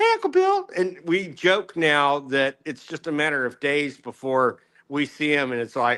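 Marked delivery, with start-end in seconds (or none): 0.0-0.7 put-on very high, loud little boy's voice. Retelling what the twelve-year-old nephew says: imitating the nephew's voice. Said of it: "Every time you do their voices".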